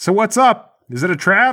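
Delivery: high-pitched, drawn-out shouting yell. Voicing a guard calling to his partner around a corner: guard yelling. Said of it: "The other guard yells".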